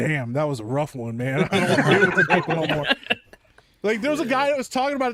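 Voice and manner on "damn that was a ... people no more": very low, deep natural voice. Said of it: "went back to his deep voice".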